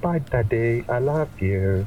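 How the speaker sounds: put-on strong British accent, slow. A daughter says goodbye to her father, the captain, as he sends her home: very british accent. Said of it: "sounds very British".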